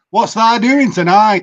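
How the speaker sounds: natural home dialect accent. Showing the others how his home accent really sounds: own native regional accent. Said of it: "if I speak with my actual accent".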